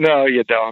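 ordinary delivery

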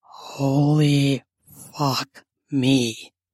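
stage whisper, hushed but loud enough to carry. Reading a story aloud, a character reacting to overheard sounds: loud whisper. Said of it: "you say in a loud whisper".

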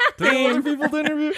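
put-on high, fast, laughing, whining kid voice.

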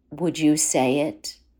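hushed, intimate stage whisper. Retelling how a man asked his partner a question: imitating a half-whisper. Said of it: "he whispers to her".

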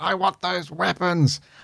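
put-on creepy clown-like alien voice. Imitating the story's alien, whose voice reminds the speaker of Pennywise. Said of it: "I can't even do the voice properly".

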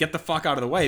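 ordinary talk, nothing marked

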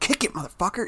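soft muttered swearing, still clearly audible. Imitating a dad at a kids' sporting event swearing at his kid, muttering. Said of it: "he was like under his breath".

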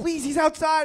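put-on, high, frantic, desperate pleading. Retelling asking a store clerk for help: imitating own begging.

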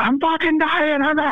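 put-on piercing, shrill, very high-pitched scream. Retelling what a wounded guy in the hall said: imitating a man screaming. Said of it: "there's this guy screaming".

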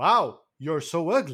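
stiff, dubbed-movie delivery with "wow" forced in. Retelling how a dubbed movie line sounded: imitating a forced "wow". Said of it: "he tries to make it like a wow".

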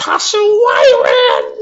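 very high, slow, drawn-out, swooping shrill yell. Retelling how a helpful woman called to the bus driver: imitating a woman yelling. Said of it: "she yells to the driver".

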